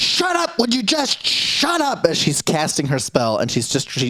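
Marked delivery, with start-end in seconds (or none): 0.0-2.0 very high, shrill, deliberate, drawn-out yell. Voicing a spellcaster who yells at everyone mid-spell: yelling in character. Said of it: "she yells".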